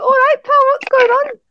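shrill, fake Birmingham or Scouse accent. Discussing British accents, one speaker demonstrates a put-on Birmingham or Scouse accent. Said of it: "like a Birmingham or like a Scouse accent".

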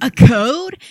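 high, loud, excited, thrilled blurt. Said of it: "is excitedly like".

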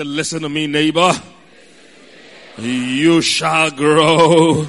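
booming, very loud, very slow preaching voice. Preacher modeling a line for the congregation to repeat, in preaching voice. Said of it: "put on your preaching voice".

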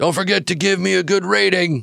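put-on booming, rough voice. Retelling what a driver called over his shoulder at the end of a ride: booming voice. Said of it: "he just kind of booms".

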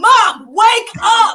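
very high, very loud, shrill scream. Retelling yelling at their mom during a movie, retelling a scream. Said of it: "I screamed it in the movie".

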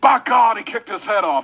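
loud, high, terrible-sounding voice, belted out. Doing a requested impression of the King, loud wrestling commentator call: Jerry Lawler King impression. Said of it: "your King impression".

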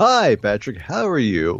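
road-weary, put-on rock star voice. A returning podcast guest greets the host, rock star voice. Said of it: "That was my rock star voice".

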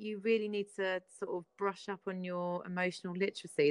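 ordinary talk

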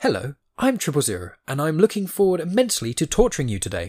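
high, prim, well-mannered robot voice. Voicing a well-mannered character who looks like C-3PO, vague C-3PO impression. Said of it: "try and do a vague C-3PO-y sort of way of talking".

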